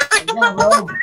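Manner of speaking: very high, loud, squeaky chipmunk voice. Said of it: "someone's squeaky".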